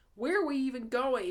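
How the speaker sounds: listless, bored, very high-pitched voice. Narrator reading Tucker's question to his friends during a chase, in Tucker's bored voice. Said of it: "Tucker asked in a bored voice".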